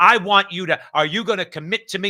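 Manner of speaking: loud, stern, bearing-down interrogating voice. Recalling a senator grilling administration officials: imitating Kamala Harris's stern Senate questioning. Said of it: "she used to talk like this".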